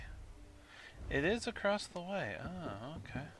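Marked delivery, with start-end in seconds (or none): 1.1-2.4 is stressed, falling emphatic tone. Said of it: "Is it across the way?".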